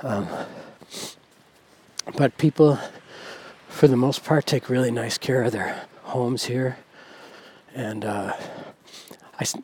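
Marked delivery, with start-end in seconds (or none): 8.4-9.6 soft whisper. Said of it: "I don't know why I'm whispering".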